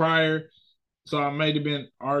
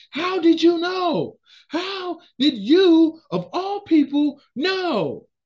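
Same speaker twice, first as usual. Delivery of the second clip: mock very high, slow, drawn-out raised yell; 14 semitones higher, 5 dB louder than usual. Retelling a story, speaker acts out one character yelling at another, imitating a character yelling. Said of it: "he was yelling at him like".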